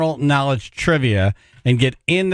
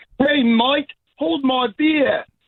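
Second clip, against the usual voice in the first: put-on high-pitched Australian accent; 12 semitones higher than usual. Asked to do an australian accent, saying hold my beer: australian accent. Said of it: "Do we have an accent here? Can you do it?".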